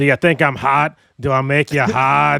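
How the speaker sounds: loud, bad put-on Boston woman's accent. Mocking a least favorite accent, the speaker does a bad boston female accent. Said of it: "my least favorite female accent ever".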